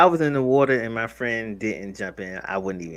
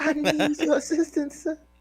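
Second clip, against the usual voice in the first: put-on pleading, begging voice, higher pitch. Acting out a plea for help from a stranger: put-on pleading voice. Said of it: "Why the voice?".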